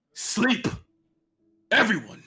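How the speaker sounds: loud bellowing voice. Narrating the scene, the storyteller voices a man calling out, loud bellowing voice. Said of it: "in this loud bellowing uh, bellowing voice".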